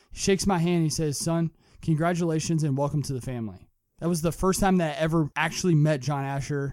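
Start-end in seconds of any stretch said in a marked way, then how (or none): none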